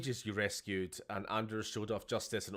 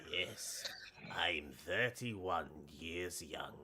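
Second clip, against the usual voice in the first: whiskey-and-cigars voice, lower and quieter; 4 semitones lower, 6 dB quieter than usual. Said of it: "his too much whiskey and cigars voice".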